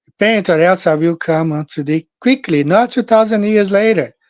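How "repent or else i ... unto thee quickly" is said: plain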